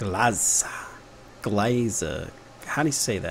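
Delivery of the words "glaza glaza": Texan accent, quieter. Trying out an unfamiliar word, the speaker says it in a Texan accent. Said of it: "I just said that in like a Texan accent".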